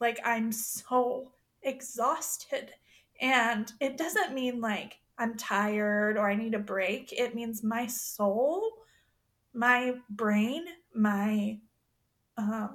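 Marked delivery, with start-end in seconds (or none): 0.2-2.7 voice on the edge of crying. Recalling how her voice sounds on past episodes: imitating her own cry-like voice. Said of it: "I hear it in my voice ... like, a cry".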